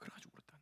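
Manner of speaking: soft, hushed preacher's whisper.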